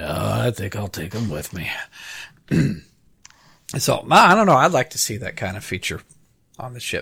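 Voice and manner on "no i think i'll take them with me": put-on starship captain voice, low and hushed. Repeating a starship captain's reply, the speaker does a put-on captain voice. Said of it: "that was a pretty good voice".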